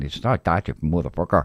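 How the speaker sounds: harsh, put-on Northern Irish accent. Contrasting Irish regional accents: imitating a hard Northern Irish accent. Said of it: "very, very hard accent".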